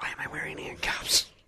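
hushed whisper. Asking why they're wearing handcuffs after being shushed: whispering. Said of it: "Who are we whispering for?".

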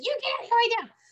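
very high, furious, shrieking angry scream. Retelling ordering a strange light away, imitating screaming angrily. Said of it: "I screamed at this thing".

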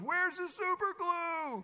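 put-on high, slow, frantic, panicked little boy voice.

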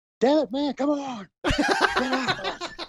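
loud yelling. Picturing coaching someone's workout from a monitor: screaming encouragement. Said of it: "just screaming from a monitor going like".

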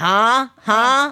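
startled, high, loud anime-style "huh". Imitating how she reacts while watching anime: imitating an anime-style "huh?". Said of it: "it's like an anime thing".

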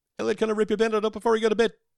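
very high, very fast, breakneck rattle. Attempting a tongue twister as quickly as possible, said really fast. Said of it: "Try and say that really fast".

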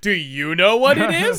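very condescending, loud, high, patronizing tone. Mocking how another speaker asks the audience a question: imitating a patronizing tone. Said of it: "in the most patronizing tone ever".

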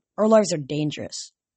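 ordinary delivery, nothing marked

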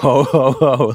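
dripping with sarcasm, acted out. Recapping a scene where Feeny answers Corey's Santa request: retelling Feeny's sarcastic ho ho ho. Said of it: "like really sarcastically".

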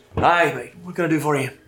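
put-on friendly, seasoned older sea captain voice. Voicing the captain greeting a traveler: voicing an older ship captain. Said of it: "he kinda looks in your direction".

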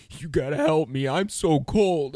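put-on teary voice, high and slow. Retelling what a man cried out when his eyes welled up, imitating a man welling up. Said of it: "his eyes start welling up".

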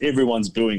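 ordinary delivery

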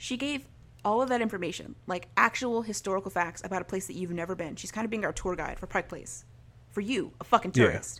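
usual speaking voice

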